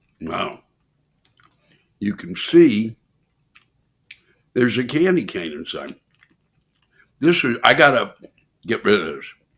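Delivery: speaking through a mouthful of food. Tasting a horrible candy after taking a bite, talking with mouth full. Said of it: "I can't talk with it in my mouth".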